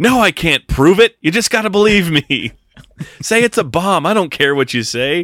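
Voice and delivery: loud, high-pitched yelling. Retelling a movie scene where a character yells into a phone: imitating someone yelling. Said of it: "And he's just yelling".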